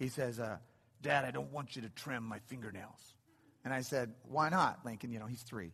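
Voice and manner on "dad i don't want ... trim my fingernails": small boy's soft, put-on tough bad-guy voice. Father retelling his three-year-old son's words during a nail trim, in Lincoln's tough bad guy voice. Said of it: "he talks in his bad guy voice".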